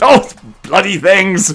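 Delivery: put-on British monster voice. Showing off a figure set, voicing the figure in a very British Hulk voice. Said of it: "It's a very British Hulk".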